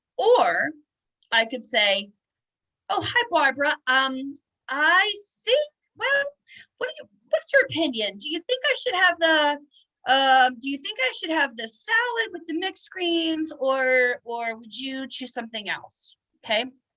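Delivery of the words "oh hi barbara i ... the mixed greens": happy, friendly, chatty, lively cheerful sing-song tone. Demonstrating a friendly exchange with an audience member, in a happy, friendly tone. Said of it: "you generally knew that I was a happier person".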